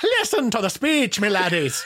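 put-on Irish accent. Doing an Irish accent that will sound close enough: put-on Irish accent. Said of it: "I'm just going to do an Irish accent and it'll sound close enough".

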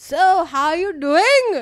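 put-on Indian accent, very slowly drawn out, high. Imitating a scam caller who slips into an Indian accent: imitating an Indian accent. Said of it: "Indian accent in".

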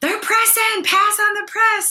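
put-on very high, shrill, loud yelling scream. Retelling yelling from the bleachers during a son's basketball game: retelling own screaming. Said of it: "I was screaming".

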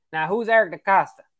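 put-on North Carolina southern accent. Retelling what a man from North Carolina asked: put-on southern accent. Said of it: "he had this, like, southern accent".

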